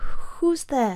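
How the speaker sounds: scared, half-awake, high, frightened mumble. A narrator reads Freddy, woken frightened in the darkness, calling out: mumbling. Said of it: "Freddy mumbled".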